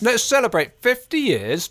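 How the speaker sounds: talking through a mouthful. Announcing the podcast's fiftieth-episode celebration, speaking with a mouth full of cake. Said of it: "I've got a bit of cake in my mouth now".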